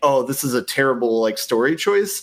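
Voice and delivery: plain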